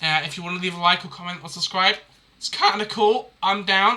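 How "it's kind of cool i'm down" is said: voice cracking up high, breaking mid-phrase. Signing off a YouTube video, asking viewers to like or subscribe, voice cracking. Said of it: "I just voice cracked".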